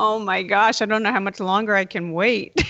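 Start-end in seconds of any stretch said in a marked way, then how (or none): none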